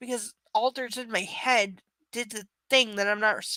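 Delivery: plain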